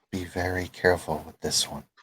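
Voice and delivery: hushed, low, quiet half-whisper. Game master voicing a player's avatar leaning down to warn someone: half-whispering. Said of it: "she whispers and she says".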